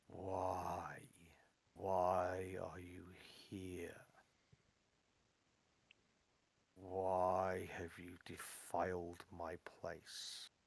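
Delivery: quiet, sorrowful, resonant lament, drawn-out "why". A figure comes forward and speaks to the intruders: quiet, mournful, resonant voice. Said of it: "says in quite a quiet voice. There's some there's a resonance and a mournfulness to it".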